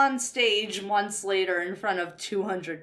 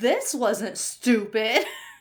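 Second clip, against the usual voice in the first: dry, mocking sarcasm meaning the opposite; 2 semitones higher than usual. Discussing fan theories about a show's characters, sarcastic.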